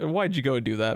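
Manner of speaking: ordinary delivery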